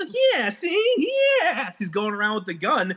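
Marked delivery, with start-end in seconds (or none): 0.3-1.7 very high, goofy slapstick stooge voice. Retelling how the hero talks with a gun: Curly voice. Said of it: "Curly talk in the beginning".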